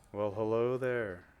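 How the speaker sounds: put-on older woman's voice. Narrating a game, voicing someone who answers a hail over audio, older woman's voice. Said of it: "This seems to be an older woman's voice".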